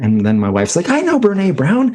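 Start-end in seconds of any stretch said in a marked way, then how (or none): 0.9-1.9 put-on excited, very high-pitched. Retelling his wife's reaction when a guest mentions a book, mimicking an excited voice. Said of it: "all excited".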